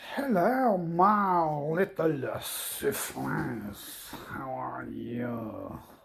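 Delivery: animated little cartoon rat voice, swooping, drawn-out "my". Greeting the little siblings, sounding like Ratatouille. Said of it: "I sound like uh, Ratatouille".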